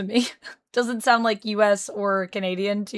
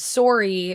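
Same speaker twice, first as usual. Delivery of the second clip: "sorry" pronounced with a Canadian accent. Showing the o sound in the word: canadian pronunciation of sorry. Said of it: "because we're saying the O".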